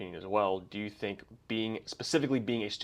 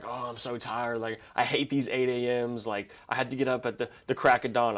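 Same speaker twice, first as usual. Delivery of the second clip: acted-out, playful, half-joking complaining grumble; 3 semitones higher than usual. Retelling what a person in class said about early classes: imitating someone complaining. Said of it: "she was complaining or whatever".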